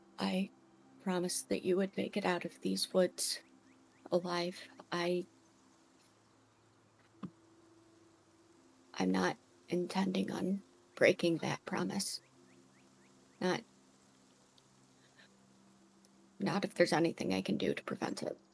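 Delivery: quiet, soft-spoken delivery. Voicing Amelia speaking to a fallen companion's body: speaking quietly. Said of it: "speak just quietly to him".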